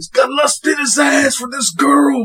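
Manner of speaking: very high, squealing, badly put-on voice. Retelling what the coach thinks, as a terrible Macho Man impression. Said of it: "That's my impression of Macho Man".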